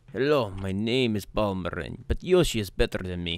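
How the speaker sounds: put-on Russian-accented English. Saying a line another speaker asked for, after practicing: Russian accent.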